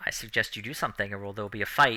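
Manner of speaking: hushed, quiet, soft, low-key voice. Voicing Saunders as he answers a hissing scarecrow, responding quietly. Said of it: "Saunders responds quietly".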